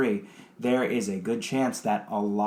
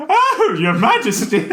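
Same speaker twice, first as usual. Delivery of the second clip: very high, very loud, fawning jester voice; 11 dB louder than usual. Playing a character dissing the landlord, address his majesty in a put-on character voice. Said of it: "I hate that voice".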